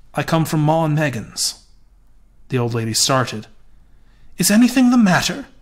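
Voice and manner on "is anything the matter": very high-pitched, breathless voice. The old lady asks the visitor who has come to call, breathless. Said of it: "She asked breathlessly".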